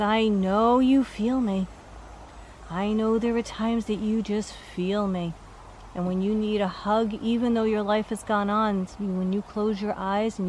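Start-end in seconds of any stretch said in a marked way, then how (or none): none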